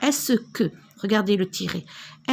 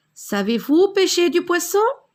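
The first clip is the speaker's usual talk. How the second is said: rising question-like tune on poisson; 9 semitones higher, 4 dB louder than usual. Showing how intonation marks a spoken question, rising question intonation. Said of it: "J'ai élevé ma voix".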